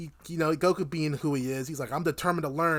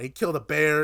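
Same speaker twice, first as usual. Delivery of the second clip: ordinary talk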